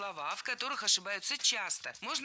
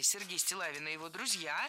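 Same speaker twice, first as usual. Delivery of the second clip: ordinary talk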